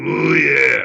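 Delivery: loud, growling, wrestling-style delivery. Quoting a wrestler's closing tagline: Pampero Firpo's deep growling voice. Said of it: "in this deep growling voice".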